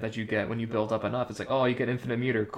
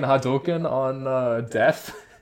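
normal talking voice

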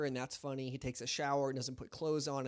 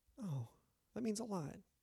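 fake heartfelt emotion, nudged up in pitch; 7 semitones higher, 4 dB quieter than usual. Hearing that George thinks of them as his adopted son: mock emotional. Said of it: "Sorry, I got emotional".

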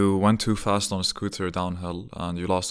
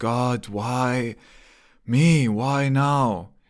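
very slow, high, loud, drawn-out tearful crying wail; 5 semitones higher, 5 dB louder than usual. Retelling how a man kept crying out after getting hurt: imitating someone crying and screaming. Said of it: "he's crying and screaming it out".

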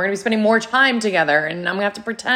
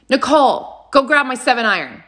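mock barking, shouted voice, slower; 4 semitones higher than usual. Retelling a client barking a task at her, imitating a barked order. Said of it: "shouting tasks".

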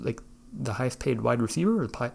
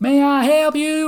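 very high, very loud, slow, drawn-out yell; 13 dB louder than usual. Describing a long line at a meat counter, the speaker imitates the woman yelling to customers. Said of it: "She's just yelling".

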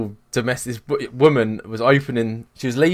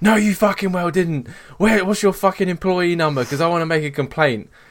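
mock furious, high, screaming, swearing rant; 6 semitones higher than usual. Retelling her mum's row with the prescription woman, imitating someone screaming. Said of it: "screaming at the people in the".

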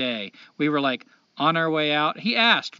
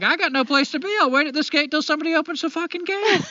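shrill, very high yelling; 11 semitones higher than usual. Retelling a shouting match with a man at a gate, retelling a yell. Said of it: "we're just yelling back and forth".

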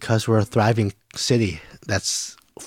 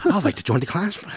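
put-on voice, much higher; 8 semitones higher than usual. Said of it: "he's talking like this".

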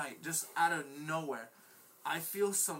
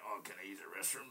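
put-on woozy, completely wasted drunk voice; 9 semitones lower, 9 dB quieter than usual. Retelling asking a girl to use her restroom: imitating own drunk voice. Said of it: "in that voice".

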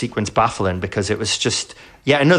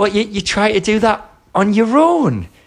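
mock, very high, condescending and patronising tone; 10 semitones higher than usual. Retelling how he talks down to her: imitating a mocking, patronising tone. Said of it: "mocking her and patronising her".

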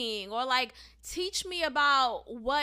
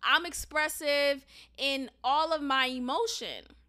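usual speaking voice

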